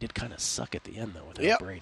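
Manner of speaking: hushed half-whisper under the breath. Imagining the last sentence of a legacy discussion: imitating a half-whisper. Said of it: "in a whisper".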